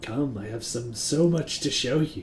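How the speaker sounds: very slow delivery. Voicing a Mind Flayer speaking into the players' heads: Mind Flayer's voice in your head. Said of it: "mental links real hard".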